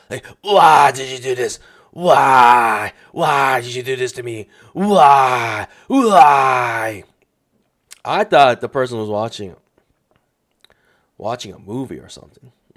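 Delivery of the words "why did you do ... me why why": very slow shouting, each "why" stretched out. Retelling what was heard through a hotel door: imitating someone yelling. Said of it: "just like that".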